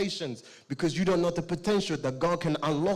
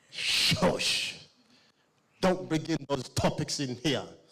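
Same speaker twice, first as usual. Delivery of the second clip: put-on hushing, shushing voice; 2 semitones lower than usual. Telling a story about a boy on a plane, playing his mother: imitating a hushing mother. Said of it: "The mother's like".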